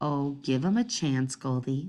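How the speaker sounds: mild, gentle, low voice.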